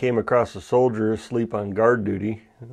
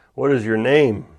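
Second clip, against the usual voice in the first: loud, raised, more demanding tone; 6 dB louder than usual. Telling the story of Alexander the Great questioning a soldier, retelling a louder question. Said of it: "and more loudly".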